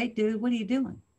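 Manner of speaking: ordinary delivery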